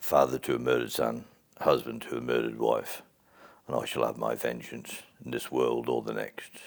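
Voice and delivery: very deep, husky put-on movie voice. Doing an impression of a man from the film Gladiator, Gladiator impression, deep husky. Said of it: "I do an impression of him from uh, Gladiator. / You got that rusky voice. / that deep".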